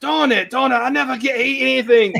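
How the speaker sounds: very high squeak with slight British lilt. Quoting a scene from Robot Chicken: light British accent. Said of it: "a little British, light British accent".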